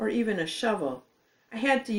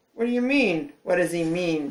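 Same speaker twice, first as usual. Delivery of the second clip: scornful, sneering, mocking tone; 2 semitones lower than usual. A narrator reads Roger's reply when Seventh is left out, sneering. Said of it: "sneered Roger".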